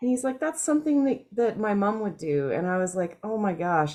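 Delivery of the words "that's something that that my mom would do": mock moved, emotional, high tone. Retelling what a man said when he looked at the speaker, imitating someone getting emotional. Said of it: "but he's like kind of getting emotional".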